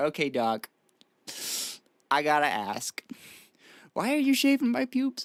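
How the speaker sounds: woozy, loopy, drowsy-sounding voice. Retelling a question asked to the doctor: imitating own loopy sedated self. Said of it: "feeling a little loopy on the sedative".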